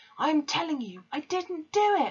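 very high, shrill, drawn-out screaming. Threatened with being locked away by an accuser, she answers back, screaming. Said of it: "Matilda screamed".

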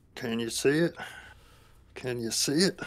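high, quiet mumble under the breath. The game master voices Benji, who mumbles under his breath. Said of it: "just kind of mumbles under his breath".

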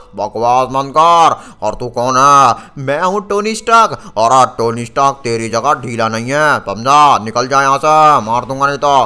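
slow, loud, angry character voice.

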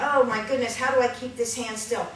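plain

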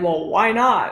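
put-on defensive tone. Retelling how some people respond to a polite refusal, mock-defensive. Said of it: "they get all defensive and they're like".

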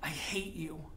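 through clenched teeth. A woman faces a young miner after spitting in his face, speaking through clenched teeth. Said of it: "through clenched teeth".

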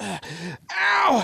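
grunting in pain. Unhooking a caught bass and sticking the hook in a thumb, grunting in pain.

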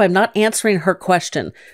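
ordinary talk

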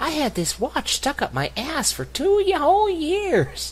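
going way up high and loud. Joking about recording movie lines in Muppet voices, doing a Big Bird voice. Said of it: "Big Bird going".

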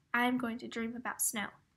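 ordinary delivery

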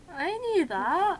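awkward, very loud and high. Replying after being told the other was only kidding, said awkwardly. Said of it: "I said awkwardly".

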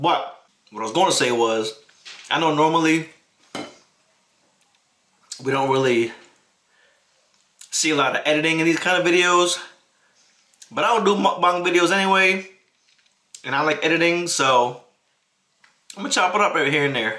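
speaking while chewing, mouth full. Eating on camera while chatting to viewers: talking with mouth full. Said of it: "I don't usually talk too much with food in my mouth".

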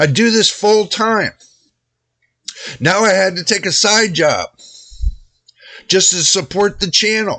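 irritated, aggrieved tone. Venting to viewers about getting nothing for a year of work: a little bit pissed off. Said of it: "I'm a little bit pissed right now".

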